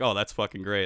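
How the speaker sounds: ordinary talk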